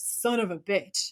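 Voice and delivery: curse dragged out slowly. Quoting a favourite line from a show: Dean's voice. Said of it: "I use this phrase for all occasions in Dean's voice".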